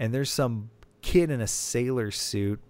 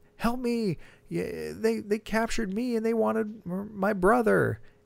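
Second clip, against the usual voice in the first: mock high-pitched shouted yelling; 11 semitones higher than usual. Speaker describes a captive on a horse's back, imitating someone yelling for help. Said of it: "be yelling like".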